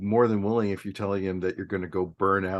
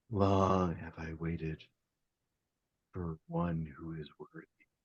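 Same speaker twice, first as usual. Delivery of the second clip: deep, ghostly, hushed half-whisper; 3 semitones lower, 8 dB quieter than usual. Narrating to the Barbarian player a voice heard on approach: deep half-whispering voice. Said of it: "maybe a deep voice going".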